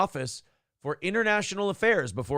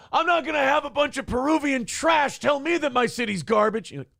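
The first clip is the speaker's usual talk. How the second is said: exasperated, furious, frustrated outburst, shrill, very high; 11 semitones higher, 4 dB louder than usual. Acting out the mayor losing his mind: imitating a frustrated outburst. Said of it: "the mayor loses his mind and he says shit he's not supposed to because he's too frustrated".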